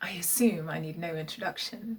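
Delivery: soft, silky, purring put-on impression voice.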